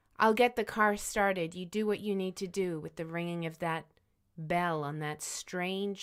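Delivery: ordinary talk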